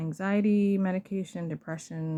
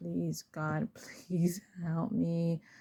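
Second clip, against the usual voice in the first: slow, mock crying, tearful pleading tone; 4 dB quieter than usual. Recalling kneeling on a sidewalk before dawn praying for help, retelling a crying plea. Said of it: "I'm just crying".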